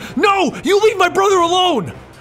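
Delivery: loud, high-pitched screaming.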